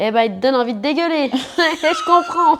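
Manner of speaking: rural country bumpkin French accent, loud and high. Chatting with the host as she grows relaxed, in a rural French accent. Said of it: "j'ai pris un accent de bouseuse".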